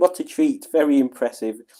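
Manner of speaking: normal talking voice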